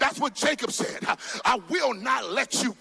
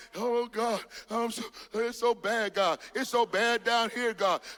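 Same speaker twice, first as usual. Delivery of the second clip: mock whimpering, slower pace. Speaker mocks someone praying to god on their knees, mock whimpering prayer. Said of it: "stop whimpering and crying".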